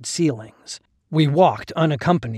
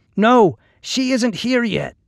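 very high, loud voice, called out; 9 semitones higher, 4 dB louder than usual. A companion answers an old man's hoarse question, replying loudly. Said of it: "Keta replied loudly".

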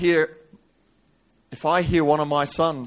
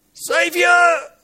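shouting. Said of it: "Bart shouting out".

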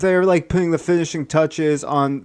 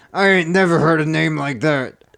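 put-on voice of an elderly man. Acting out a skit, the old man meets Gary: acting out an old man. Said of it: "the old man goes".

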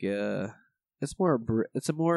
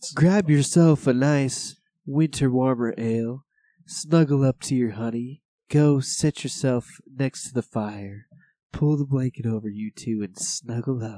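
louder put-on sultry, sexy radio voice; 7 dB louder than usual. Pretending to host a beer show, sultry Delilah voice. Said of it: "I'm trying to pull a Delilah".

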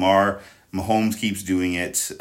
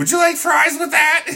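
put-on very high, loud, squeaky teenage voice; 7 dB louder than usual. Describing a hoarse referee announcing penalties, the speaker imitates him: squeaky teen from The Simpsons. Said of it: "sounded like that like squeaky voice teenager".

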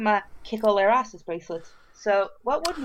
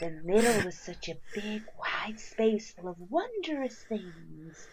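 quieter, put-on creepy children's storybook narrator voice; 8 dB quieter than usual. Mocking the other speaker's line as a children's audiobook: mock creepy children's audiobook narration. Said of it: "that sounded like a really creepy".

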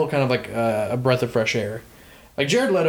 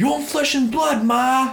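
very high-pitched, put-on Brooklyn accent; 12 semitones higher than usual. Discussing a movie, the speaker quotes Jared's line in a Brooklyn accent. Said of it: "he's doing a Brooklyn accent".

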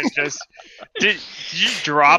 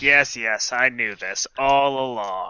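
put-on smug, all-knowing, scheming old man voice; 4 semitones lower, 4 dB quieter than usual. Imitating a player as a secret old man twenty steps ahead: imitating Aaron as a scheming old man. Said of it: "Aaron is secretly old man twenty steps ahead".

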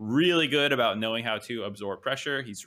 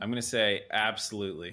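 ordinary talk

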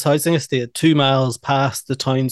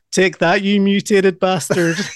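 mock scream, much higher pitched; 5 semitones higher than usual. Retelling a favorite movie scene line by line, retelling a farmer's scream. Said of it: "the farmer screams".

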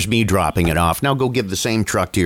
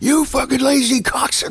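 put-on man's scream, much higher. Recounting a reality-show scene where a guy got out of the car: retelling a man screaming. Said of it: "started screaming".

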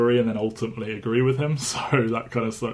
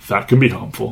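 deadpan flat delivery, much louder; 7 dB louder than usual. Reviewing a film, quoting a line Nick Fury says to camera, deadpan. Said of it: "sort of deadpans like".

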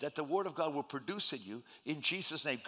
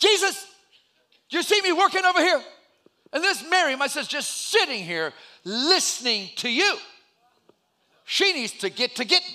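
mock very high, very loud, shrill, fed-up hissy fit; 11 semitones higher, 10 dB louder than usual. Retelling a busy woman complaining about her sister; retelling a hissy fit. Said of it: "she just had a hissy fit".

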